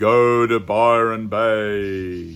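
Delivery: booming, strong, manly wizard voice, stretching out Bay. Retelling what a voice said to the speaker, in a Gandalf voice. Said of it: "like Gandalf from Lord of the Rings".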